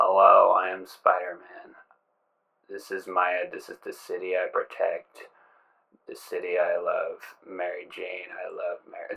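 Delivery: low, flat, unemphatic phoned-in delivery. Mocking the game's voice acting: phoned-in Tobey Maguire voice. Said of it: "Toby, put some emphasis into it".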